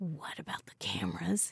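very quiet, hushed, barely voiced whisper. Phil looks at Georgia and asks her, whispered. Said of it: "he whispered".

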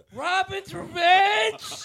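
blasted out loud, shrill and wild. Giving an impression when asked for a Cageism: Nicolas Cage impression. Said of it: "Give us an impression right now".

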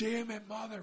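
put-on very high, shrill yelling full of hatred. Describing yelling at him as he runs away, retelling a yell. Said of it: "if I yelled at you like this".

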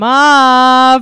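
put-on Long Island accent. Recommending a funny YouTuber's video, quoting him in a Long Island mom accent. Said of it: "a lot of Long Island mom accent in this episode".

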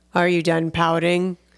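low, grumpy, grumbling put-on voice. Trying again to do a line in his voice, mock-grumpy put-on voice. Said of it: "It's a grumpy voice".

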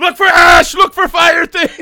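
very loud, very high, shrill, frantic panicked scream. Retelling a night of sirens with no storm, imitating own panicked screaming.

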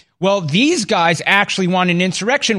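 ordinary delivery

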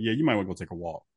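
soft, quick, calm matter-of-fact delivery.

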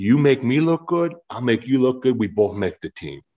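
put-on California accent with Samoan sound. Retelling what he said while they sat in a locker, in a Samoan California accent. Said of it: "he had this kind of Samoan California accent".

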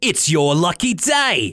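put-on slow, swooping, wavering cockney accent that slips. Retelling a cartoon cook's line, imitating a slipping accent. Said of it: "Missus McGrady's accent kind of slipping in and out".

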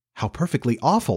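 ordinary delivery

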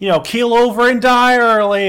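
very high, shrill, obnoxious mocking delivery. Retelling how a drunk lady heckled the vendor: imitating mocking heckling. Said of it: "hype him up, but also somehow heckle him".

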